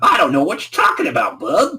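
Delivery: put-on high, swooping Brooklyn accent laid on every word. Answering a character who tells him to drop the accent: Impmon's Brooklyn accent. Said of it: "stop with that Brooklyn accent".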